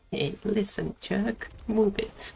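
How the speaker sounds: put-on dumb-sounding voice. Mocking a character's line right after hearing it, in her dumb voice. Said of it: "She has such dumb voice".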